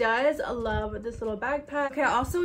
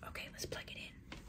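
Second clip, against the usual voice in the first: hushed whisper, barely audible. About to plug it in in front of y'all: whispering. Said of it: "Why am I whispering?".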